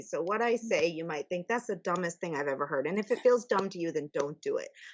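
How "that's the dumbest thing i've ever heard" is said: plain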